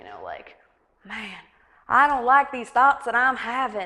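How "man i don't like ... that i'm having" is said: put-on musing Southern US accent. Voicing the inner thoughts of imagined people on a couch: southern accent. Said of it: "I'm giving them a southern accent".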